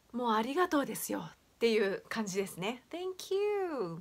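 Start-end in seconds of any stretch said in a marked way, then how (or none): 2.9-4.0 thank you, strong hard stress on you. English pronunciation tip in Japanese: stress on you in thank you. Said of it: "U の方をしっかりと強調して、発音すれば".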